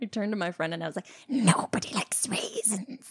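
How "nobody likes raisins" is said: tiny, breathy, whispery little pixie voice. Retelling what she said to her friend during a scary movie, in a little pixie voice. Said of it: "Like the little pixie voice".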